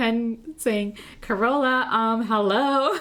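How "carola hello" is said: giggling speech, pitched up and louder. Reading out a chat message and laughing at it: laughing while talking. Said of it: "I'm sorry, I'm laughing".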